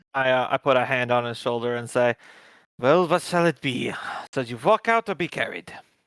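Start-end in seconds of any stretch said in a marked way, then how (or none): 2.7-5.7 put-on French-accented delivery. Role-playing, the speaker's character puts a hand on a man's shoulder: french accent. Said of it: "I get rid of the French accent".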